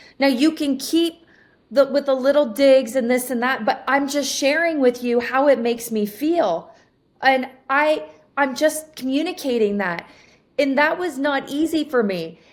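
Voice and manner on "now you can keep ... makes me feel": usual speaking voice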